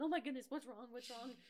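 loud, rushed, frantic, worried, alarmed outcry. Retelling how the speaker's mom reacted to screaming at 4 a.m., imitating mom's alarm. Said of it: "And my mom's like".

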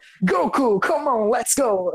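slow, deliberate, drawn-out English-dub anime rival voice. Imitating a cartoon villain from an English dub: Vegeta's English dub voice. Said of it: "o Vegeta chega pro Goku e fala".

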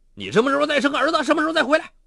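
very high, roaring bellow with rising pitch. Su xu, in a quarrel with his wife, speaks roaring. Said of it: "苏旭咆哮道".

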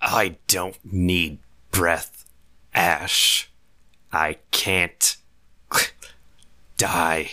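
slow words gurgling up through the throat. Narrator voicing a man with a knife in his neck, speaking to Ash, gurgling. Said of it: "As he gurgles out".

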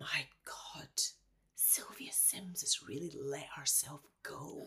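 snide, bitchy, breathy whispered aside. Retelling what an actress said during a read-through: imitating a whisper. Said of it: "she leaned across to me during the read-through and she just whispered".

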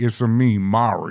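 devilish, put-on devil voice. Mocking a Mario movie voice among friends, devilish Chris Pratt Mario voice. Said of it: "That was like devilish".

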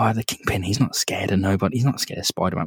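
hushed, half-whispered stage whisper, still voiced. Acting out a comic character's line while Kingpin rages nearby: imitating someone half-whispering. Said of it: "you can imagine he's whispering this now".

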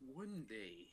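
put-on fairy-tale storyteller narrator voice. Asked for a good voice, starting a story: storytelling man voice. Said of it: "A storytelling man voice".

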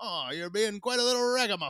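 put-on old-timey 1920s gangster voice, very high, loud. Guessing what ragamuffin means, the speaker mimics a gangster saying it; 1920s gangster voice. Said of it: "I think of like a 1920s gangster saying".

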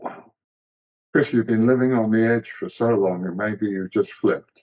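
normal talking voice

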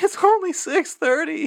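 high, slow whine, almost crying. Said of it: "is, like, almost crying".

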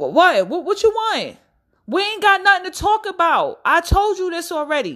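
"what" stretched long and kept high, called out. Acting out yelling at someone on the street, yelling in the street. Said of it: "because I'm yelling in the street".

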